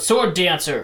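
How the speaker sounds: very loud shouted yell. Calling out in character to get another character's attention: yelling out. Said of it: "he yells out".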